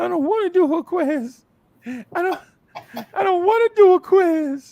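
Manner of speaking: very high, loud, tearful whiny crying. Retelling a nervous classroom moment before a quiz, imitating Tamika crying. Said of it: "started crying".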